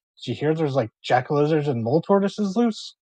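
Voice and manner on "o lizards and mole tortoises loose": normal talking voice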